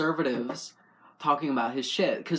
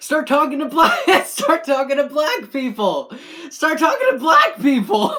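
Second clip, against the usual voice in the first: yelling, shouting, higher-pitched and louder; 11 semitones higher, 11 dB louder than usual. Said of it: "I don't know why I'm fucking yelling".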